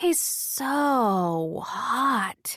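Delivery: speaking in a murmur. Reading a scene aloud, a nurse comments on a man: murmuring. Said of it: "murmurs nurse number one".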